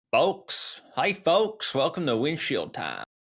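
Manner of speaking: sing-song, put-on, Southern-sounding Virginia accent. Asked about his intro, a podcast host repeats his greeting in a virginia accent. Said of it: "Virginia accent came out there".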